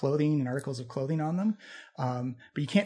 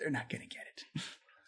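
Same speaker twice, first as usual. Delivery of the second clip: whispered mutter under the breath; 11 dB quieter than usual. Voicing a golden skull commenting on the others, muttering under his breath. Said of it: "going under his breath".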